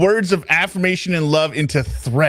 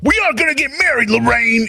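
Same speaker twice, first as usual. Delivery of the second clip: put-on threatening bully voice, higher; 9 semitones higher than usual. Quoting a line as a threat: Biff voice. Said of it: "anyone manage to turn where "I'm gonna marry you" into a threat other than Biff".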